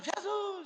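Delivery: play-acted, very high, crying-out shout. Retelling a blind man calling to jesus: imitating a blind man shouting. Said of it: "o cego tá gritando".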